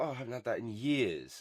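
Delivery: ordinary delivery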